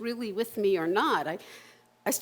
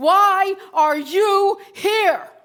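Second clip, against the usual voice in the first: booming call, very loud and very high; 9 semitones higher, 10 dB louder than usual. Retelling a man who turns and points at the speaker, imitating a booming, commanding voice.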